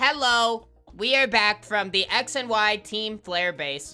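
put-on robotic voice. Voice acting a robot announcing its return to base, in a put-on robot voice. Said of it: "Let me just get my robot voice back".

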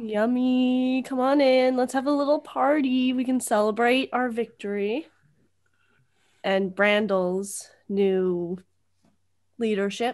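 ordinary talk

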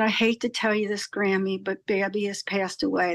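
ordinary talk

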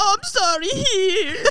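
mock weak, high-pitched, crying whimper.

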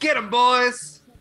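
high, loud, drawn-out rousing yell. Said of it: "Jules yells".

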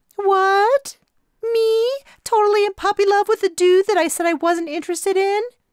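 very high, loud, flustered squeaky voice. Narrator teasing a blushing Mary by imitating her, discombobulated Mary impression. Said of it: "in my best impression of a discombobulated Mary".

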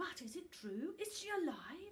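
very high, eager, breathless, excited, wondering voice. Asking the talking book about the sleeping dragon, breathless with excitement. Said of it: "breathless in his excitement".

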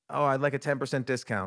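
plain

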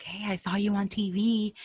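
hushed, secretive half-whisper. Retelling how people at church quietly told them something: imitating someone half-whispering. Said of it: "these people were sort of whispering it to us".

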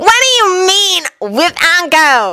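wary, pressing tone. A character questions a remark about a date, demanding suspiciously. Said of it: "Uncle demanded suspiciously".

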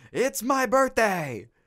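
shrill, high, furious shouting voice. Retelling a restaurant story, imitating a man's angry yell. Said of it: "he's yelling".

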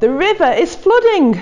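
surprisingly high, squeaky giraffe voice. A narrator reads the giraffe speaking down to the worried animals, in a surprisingly squeaky voice. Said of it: "said the giraffe in a surprisingly squeaky voice".

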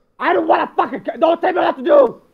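high, furious, angry blurt breaking off mid-word. Refusing to be told to calm down: angry outburst. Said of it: "you need to calm down".

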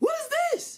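piercing, shrill, very high shouting. In a scene, a character looks inside a box that is not theirs, yelling. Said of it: "why are you yelling?".

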